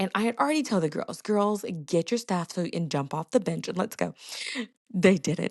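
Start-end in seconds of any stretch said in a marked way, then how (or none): none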